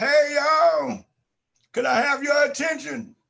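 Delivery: play-acted loud, high hollering call. Recalling standing in a campus cafeteria to address everyone, retelling a call to a crowd. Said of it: "And I said it like that".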